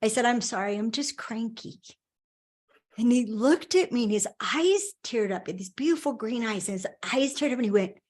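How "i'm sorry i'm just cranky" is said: ordinary talk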